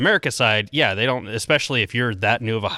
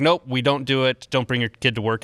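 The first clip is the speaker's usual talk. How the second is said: plain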